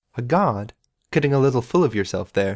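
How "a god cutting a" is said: usual speaking voice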